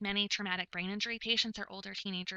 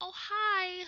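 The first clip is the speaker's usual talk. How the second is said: put-on very high, loud talking-to-a-child voice; 11 semitones higher, 5 dB louder than usual. Showing the voice to avoid, high-pitched talking-to-a-kid voice. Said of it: "raising your voice so that it's high pitched like you would talk to a little kid".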